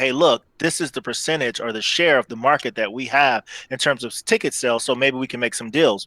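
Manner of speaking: ordinary talk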